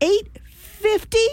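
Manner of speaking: very high, outraged outburst said right out loud, acted. Retelling a moment near a cashier, the speaker recalls saying it: said out loud. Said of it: "saying in my out loud voice".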